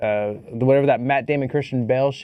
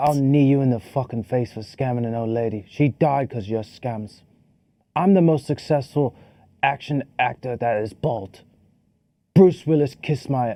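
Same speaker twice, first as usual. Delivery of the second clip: convincing put-on British accent. Mocking the Beekeeper trailer, the speaker performs its lines in a good British accent. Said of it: "That was a good accent".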